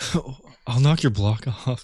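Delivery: cool, calm, collected voice. Doing an impression of a friend when asked: imitating Alex Ward. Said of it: "Could you do an impression of him".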